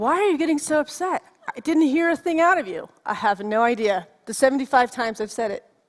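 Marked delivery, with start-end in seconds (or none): 0.0-2.9 put-on high-pitched voice of a thirteen-year-old boy, talking back. Retelling how a thirteen-year-old son answers at the door: imitating Ty. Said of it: "He stands there like".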